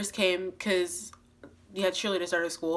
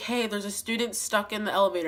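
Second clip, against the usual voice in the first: usual speaking voice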